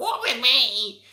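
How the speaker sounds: shrill, very loud screaming at the top of the lungs. Retelling a film scene where a character screams at Jacob: imitating Queenie screaming. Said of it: "she screams at him like".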